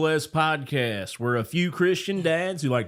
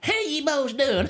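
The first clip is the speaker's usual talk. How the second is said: put-on old rural man voice, higher pitched; 10 semitones higher than usual. Explaining a noise to the others, then doing a Roscoe P. Coltrane voice. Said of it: "that was my old redneck fella".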